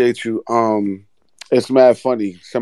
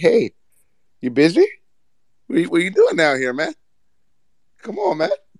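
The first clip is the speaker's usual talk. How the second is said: animated, pitched-up character voice; 8 semitones higher than usual. Imagining the boss tapping on the car window: imitating a boss tapping on the window. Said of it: "she would have tapped on the window like".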